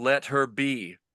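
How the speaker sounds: loud booming roaring voice. Voicing a strange voice in the story, loud booming roar. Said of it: "the loud booming roar?".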